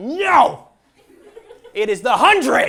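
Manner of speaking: loud, high, violent, furious angry outburst.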